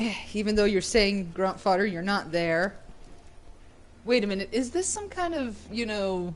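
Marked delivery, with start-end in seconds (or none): none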